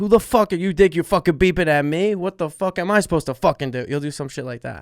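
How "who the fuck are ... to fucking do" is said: high, furious, swearing yelling outburst. Imitating a friend yelling after someone beeps at him: Sebastian impression yelling. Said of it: "You're like".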